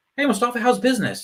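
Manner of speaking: very high-pitched, weird, awkward voice. Describing weird LinkedIn messages from some people, imitating a weird LinkedIn greeting. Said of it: "that really weird interaction".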